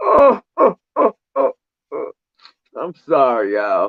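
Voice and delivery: very high, slow, drawn-out fake sobbing. Apologizing to the audience after their team got eliminated, mock sobbing. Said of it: "I'm still crying".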